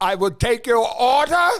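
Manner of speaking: fake, exaggerated German accent. Asking whether the waiter came up to take the order, mock german accent. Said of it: "That's how we stereotype uh, poor Germans".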